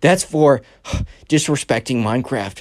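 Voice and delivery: mock panting, out of breath, child voice. Retelling a kid's words after a short run: imitating a kid out of breath. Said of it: "the panting sounds were 'cause the Minecraft kid was out of breath".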